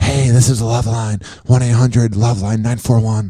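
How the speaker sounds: late-night call-in radio announcer voice. Mocking a podcast voice: late night radio show host voice. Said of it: "like one of those late night sex shows".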